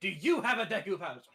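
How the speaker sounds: loud yelling. Playing a character yelling a question at a guild tradesman, yelling at a tradesman. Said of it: "Lotus is gonna yell at this one".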